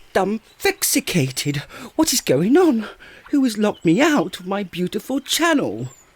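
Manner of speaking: flustered, excitable, worked-up, very high voice. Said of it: "you excitable little fellow".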